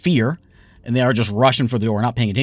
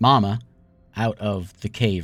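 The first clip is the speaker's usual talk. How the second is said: ordinary talk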